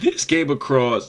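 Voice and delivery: voice breaking and cracking, jumping high. Introducing the episode's first topic, the speaker's voice cracks. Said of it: "Look at that voice cracking".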